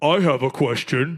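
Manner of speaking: deep, slow, over-masculine macho voice. Retelling how the friend asked a question, imitating an over-masculine voice. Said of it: "He talks like that, like like over masculine".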